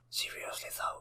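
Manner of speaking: very soft secretive whisper. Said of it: "when someone whispers you".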